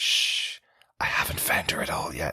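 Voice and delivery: slow, drawn-out, secretive conspiratorial whisper. Recapping a comedy scene, acting out one character's reply to another, retelling a whisper. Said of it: "Why are you whispering?".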